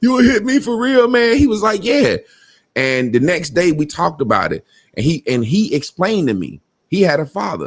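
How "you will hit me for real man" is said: put-on play-acted, high, drunken blubbering through tears. Retelling a drunken night, speaker quotes their past self, imitating own drunk crying. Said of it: "I started crying like".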